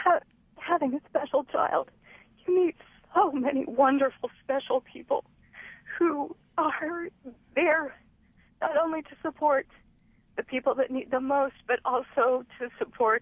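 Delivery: high, tearful, choked-up, emotional crying voice. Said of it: "I'm so emotional".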